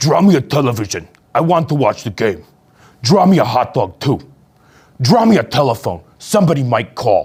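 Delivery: silly, demanding, bossy monster voice. Reading a picture book aloud, voicing its demanding monster in a silly monster voice. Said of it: "I've got a fun voice for the monster".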